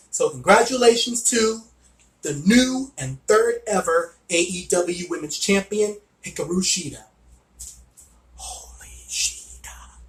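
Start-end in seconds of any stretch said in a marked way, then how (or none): 8.3-9.6 very soft whisper under the breath. Reviewing an AEW women's title match, whispering. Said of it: "I gotta whisper".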